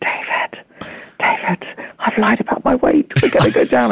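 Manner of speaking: hushed, unhurried whisper under the breath. Retelling a shaky plane ride, whispering to a friend: imitating her own whisper. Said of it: "I whispered to David".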